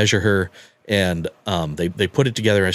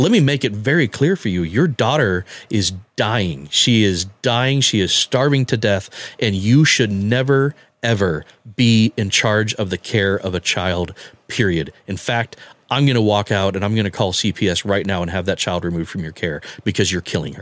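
plain

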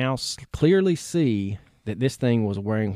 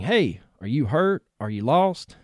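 imitated mock shouting; 3 semitones higher than usual. Narrating a man leaving his truck to approach a figure, retelling a shout.

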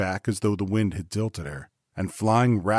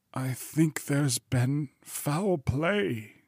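rasping, hoarse, slow, drawn-out, slightly raised voice; 7 semitones higher than usual. Answering the lawyer's question, a man speaks hoarse. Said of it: "said Poole hoarsely".

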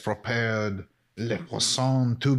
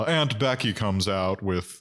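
ordinary delivery

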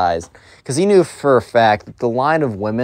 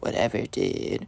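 put-on mumbling under breath, quieter; 11 dB quieter than usual. Retelling a spoiled kid answering the teacher: imitating mumbling under breath. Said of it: "Mumbles under his breath".

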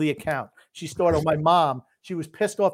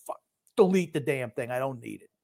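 mock grumpy old man voice, lower and quieter; 3 semitones lower, 4 dB quieter than usual. Retelling a player's angry reply about a blocked account: imitating a grumpy old man. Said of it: "sounds exactly like the grumpy old man".

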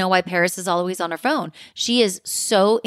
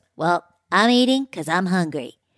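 put-on announcer voice. Imitating how a cast member always announces she's eating: imitating Erica. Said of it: "She always says".

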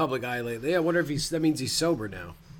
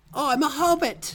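very high, deliberate, slow, drawn-out piping voice; 11 semitones higher than usual. Joking about an Ian Holm impersonator in a movie: Ian Holm high voice. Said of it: "Ian Holm just being Ian Holm with the high voice".

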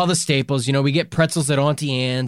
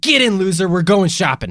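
put-on shouting voice. Retelling a story where someone pulls up: imitating someone shouting. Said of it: "he shouts at me".

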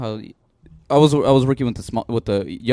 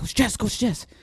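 mock-serious little girl voice, higher; 12 semitones higher, 4 dB quieter than usual. Retelling how a kindergarten girl came up to report: imitating a serious little girl. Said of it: "the most serious look".

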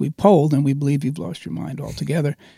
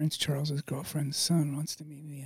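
quiet, private murmur under the breath; 13 dB quieter than usual. Telling a story about a scheduler's request, retelling saying it quietly to oneself. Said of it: "I said to myself quietly".

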